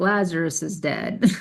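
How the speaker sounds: put-on dry, flat, expressionless deadpan delivery. Imagining how Jesus told them about Lazarus, imitating a deadpan delivery. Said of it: "Jesus just deadpanning and being like".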